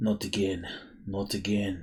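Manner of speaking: soft, repeated half-whisper, as if to himself. Voicing a king who mutters to himself in dismay: half-whispering. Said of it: "you hear him whispering".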